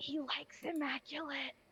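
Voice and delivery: whispering. A player announces they will whisper in Giant, then does: whispering. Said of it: "I'm gonna whisper in giant".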